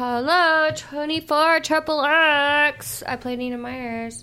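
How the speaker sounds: loud delivery with the "X" stretched out. Introducing oneself and a film role: Oprah voice. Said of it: "had my A-, Oprah voice come out there".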